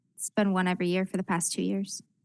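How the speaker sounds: small, soft character voice. A narrator voicing Emma from behind the players, in Emma's small, soft voice. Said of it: "you hear Emma's uh, small, soft voice say".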